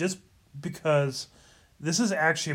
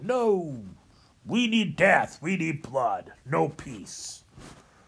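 every word dragged out slowly. Speaker mimics people rejecting a message of peace; Independence Day alien voice. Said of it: "I almost sounded like the alien from Independence".

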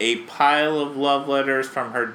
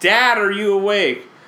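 mock loud, high-pitched put-on shout; 7 semitones higher, 6 dB louder than usual. Retelling cartoon boys waking their sleeping dad: kids shouting in dad's ear. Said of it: "they shout in his ear".

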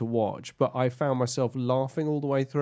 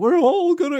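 mock high cracking shout, higher and louder; 9 dB louder than usual. Imitating a game's outlaw gang leader: voice that cracks and goes high. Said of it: "It cracks and goes high".

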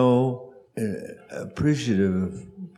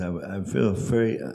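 plain

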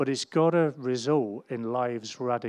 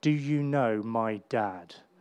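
imitated proud, very loud child voice, slow. A father retells his six-year-old daughter telling her school friend, imitating a proud, very loud child. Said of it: "she says very proudly and very loudly".

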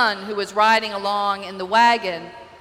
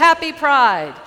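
loud, raised yelling voice; 4 semitones higher, 5 dB louder than usual. Retelling waving at the crowd at Pride, retelling own yell.

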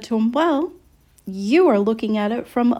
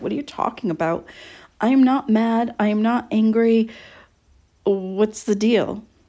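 mock startled, baffled, shocked tone. Retelling how an ex answered back: imitating surprised, shocked reply. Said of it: "answer back in surprise and shock".

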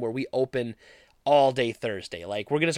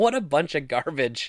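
ordinary talk, nothing marked

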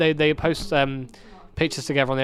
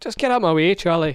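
bad, terrible, fake put-on Scottish accent; 3 semitones higher, 3 dB louder than usual. A short put-on line, later called a terrible Scottish accent. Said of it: "That was a terrible Scottish accent".

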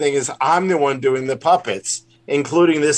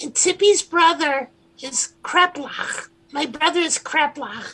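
pitch way up like a puppet; 14 semitones higher, 3 dB quieter than usual. Showing the character voices they do, introducing Tippy's brother: Tippy puppet voice. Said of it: "Tippy talks like this".

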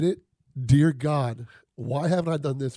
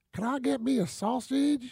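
put-on high-pitched child voice, Southern twang; 9 semitones higher, 4 dB quieter than usual. Retelling what little kids asked in a polite crowd, Southern twang kid voice. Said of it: "Southern Twang".

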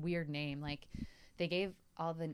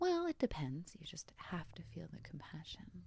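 soft, whispered voice with utter care. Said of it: "inflect your voice to sound compassionate".

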